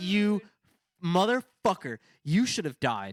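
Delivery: furious outburst. Recounting watching someone narrowly avoid a crash, retelling being furious. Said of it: "I'm so fucking mad".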